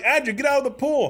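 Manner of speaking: very high yelling. Retelling yelling at someone standing drenched in a murky pool, retelling a yell. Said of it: "And I'm yelling".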